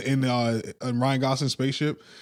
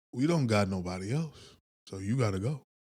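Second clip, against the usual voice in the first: put-on cold, callous voice, quieter; 2 semitones lower, 6 dB quieter than usual. Retelling a film plot, voicing the german lady: imitating a cold, callous character. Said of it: "the German lady comes in very cold and callous".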